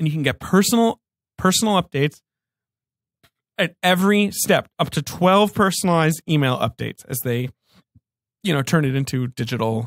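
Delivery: a little choked up, voice catching. Host describing a service that digitizes family memories, a little choked up. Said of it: "You're getting a little choked up".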